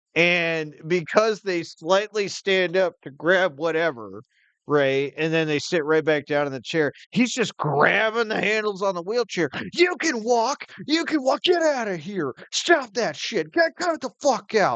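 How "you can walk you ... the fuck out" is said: put-on scream, higher pitch. Retelling a man grabbing a wheelchair user: imitating someone screaming. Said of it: "He's screaming".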